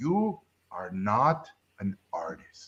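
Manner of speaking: soft, swooping, sing-song, very slow and drawn out. Retelling what a professional told the speaker at seventeen, talking like Yoda. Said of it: "he talked like Yoda".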